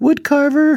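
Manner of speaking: storybook witch voice, very high. Quoting the witch from the movie Brave: impersonating the witch from Brave. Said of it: "I think that's a pretty good impersonation".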